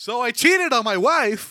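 high-pitched, loud, slow scream.

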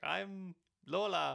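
very loud, high-pitched put-on French accent. Retelling Miss World contestants' intros, the speaker imitates one in a French accent. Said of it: "give me that French one there".

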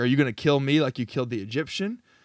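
mock sarcastic tone. Retelling what one of two struggling Hebrews said to Moses: imitating a sarcastic retort. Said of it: "very sarcastically is like".

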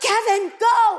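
high, loud screaming. Recalling shouting at a young boy falling behind in a race: retelling a scream. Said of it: "I'm screaming at him".

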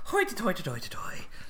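put-on wheedling Irish accent.

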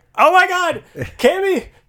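high, loud, panicked crying out. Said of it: "I'm like".

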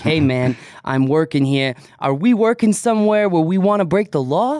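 put-on New York accent, plain everyday talking. Talking it through with the others, voicing Chris in Chris's New York accent. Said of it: "that New York accent".

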